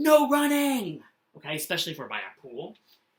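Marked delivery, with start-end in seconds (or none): 0.0-1.0 very loud and high shouting. Explaining a punctuation mark, giving an example line while yelling. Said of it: "I am for yelling".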